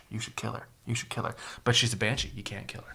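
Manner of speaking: whispered delivery. Retelling what Greymane whispers in Anduin's ear: imitating Greymane whispering. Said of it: "he's just been whispering in Anduin's ear".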